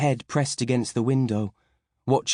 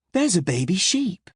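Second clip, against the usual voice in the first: put-on forced bright cheer, pitched up; 7 semitones higher than usual. Mum points out a baby sheep to her child, forced bright, happy voice. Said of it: "trying to make her voice sound bright and happy".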